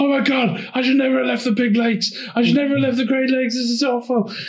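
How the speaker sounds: acted, very high, full-on frantic, panicked freak-out. Recounting a character's reaction to an earthquake, retelling a panicked freak-out. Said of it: "Randy's just like freaking out".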